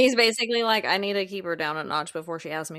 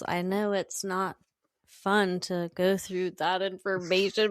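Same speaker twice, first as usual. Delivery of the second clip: flat, monotone put-on robotic voice. Retelling Angel thanking Cordelia for the files: monotone robotic Angel voice. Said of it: "so monotone and robotic".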